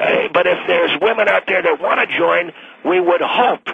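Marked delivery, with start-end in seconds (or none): 2.8-3.6 hope leaned on and slightly raised. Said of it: "and I underline the word hope".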